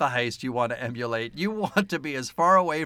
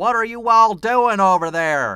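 put-on loud, high, over-the-top Southern accent laid on thick; 8 semitones higher, 8 dB louder than usual. Criticizing a movie's Southern accents, mimicking the character Will's exaggerated Southern accent. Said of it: "Kind of accent".

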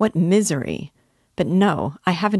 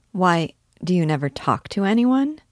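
ordinary delivery, nothing marked

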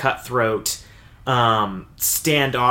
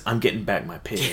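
mock-nonchalant, much lower-pitched voice; 4 semitones lower, 7 dB quieter than usual. Retelling what a character in a story says, mock-nonchalant. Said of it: "He just nonchalantly says".

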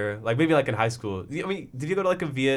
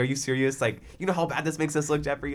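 usual speaking voice

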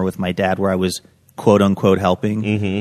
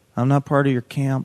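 soft, high, timid, meek voice; 5 semitones higher, 6 dB quieter than usual. Retelling being called over by a camp counselor as a child: retelling a meek reply. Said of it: "I say meekly".

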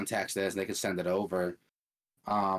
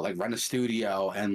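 ordinary talk

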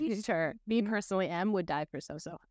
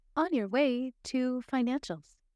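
voice as over an intercom, higher; 4 semitones higher than usual. Voicing a character greeting players over the intercom: Geneva's voice over the intercom. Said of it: "you hear Geneva's voice come over the intercom".

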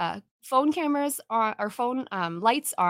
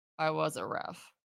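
very quiet, flat, deadpan monotone; 7 semitones lower, 10 dB quieter than usual. Recounting a video where Maroon is asked about reffing, imitating Maroon's deadpan. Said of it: "his deadpan is perfect".

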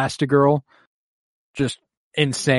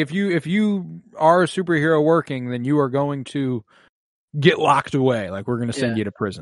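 plain

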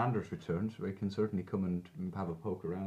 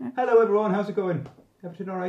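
booming, high-pitched, very loud cheery voice; 12 semitones higher, 12 dB louder than usual. Coming back in and greeting everyone, cheery. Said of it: "You're all cheery".

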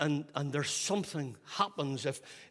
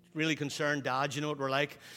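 plain

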